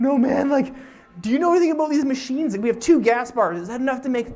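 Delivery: acted frantic panic, very high, loud, shrill, rattled-off. Retelling how stranded travelers on an ATV sounded: imitating panicking people. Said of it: "completely off the deep end".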